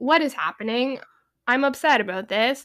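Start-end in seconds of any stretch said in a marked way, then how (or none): none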